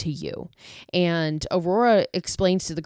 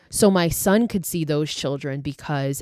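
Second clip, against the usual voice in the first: plain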